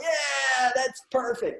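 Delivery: very high-pitched, cheery, happy dog voice. A dad retells a morning chat with his dog: voicing Lulu as a happy dog. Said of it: "Lulu is happy all the time".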